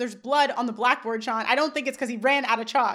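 ordinary delivery

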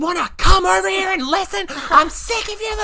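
very high-pitched, shrill screaming. Retelling how her group screamed at some girls in the quadrangle, imitating someone screaming.

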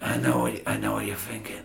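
whispered through a clenched jaw. Trying to imitate how he talks: whispered through a clenched jaw. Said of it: "He's always talking through a clenched jaw, but whispering".

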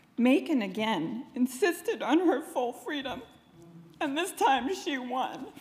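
teary, on the verge of crying. Telling maiken's story, the speaker gets teary. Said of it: "I get really teary when I tell Maiken's story".

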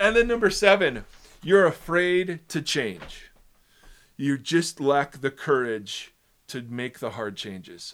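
sarcastic reading, sarcasm seeping into the voice. Reading a list item from an article aloud: sarcastic tone. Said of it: "I can't keep the sarcasm out of my voice".

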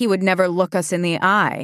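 usual speaking voice

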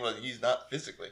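put-on sassy, smart-mouthed delivery. Retelling a movie scene where a character answers back: imitating a sassy retort. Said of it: "a sassy".

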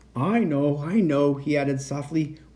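ordinary delivery, nothing marked

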